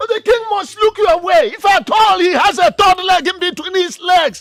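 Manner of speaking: loud yelling. Answering someone's doubt that the king will look her way: shouting. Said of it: "Sorry for shouting at you".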